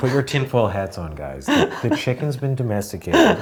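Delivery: secretive conspiratorial tone with swooping pitch. Imitating David Chang sharing a chicken fact: imitating David Chang's conspiratorial talk. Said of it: "he's like".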